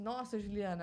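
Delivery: normal talking voice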